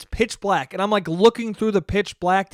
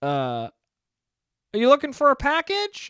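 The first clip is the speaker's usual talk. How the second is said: put-on sweetest little old man voice, sing-song; 7 semitones higher than usual. Retelling what an old man asked when he showed up with a package, sweet old man voice. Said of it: "Sweetest old man voice you ever heard".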